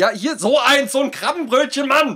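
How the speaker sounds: exasperated tone.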